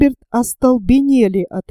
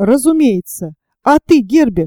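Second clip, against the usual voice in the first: ordinary delivery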